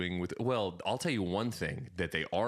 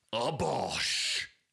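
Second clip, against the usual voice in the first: put-on thick, heavy Cockney accent; 4 semitones higher than usual. Telling someone about a man on Instagram and his catchphrase, Tom Skinner Cockney impression. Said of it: "He's got a real thick Cockney accent".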